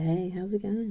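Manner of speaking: dropped, seductive voice. Explaining a woman's voice cues when talking to you, imitating a lowered sultry voice. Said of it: "lowers the pitch of her voice to make her sound more sultry".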